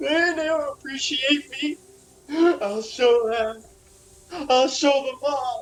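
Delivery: high, tearful weeping words through sobs. A narrator voices a man sobbing into a boiling pot, crying. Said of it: "And he's kind of crying".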